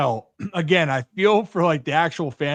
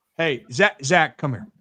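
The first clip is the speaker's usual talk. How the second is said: authoritative, commanding voice. Demonstrating how to call someone over on Zoom, as a commanding call. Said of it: "Do you feel the power in that".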